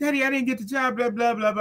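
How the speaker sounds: play-acted weepy, sobbing, tearful crying. Retelling a past talk with a parent after missing a job: imitating own past crying. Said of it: "I'm crying".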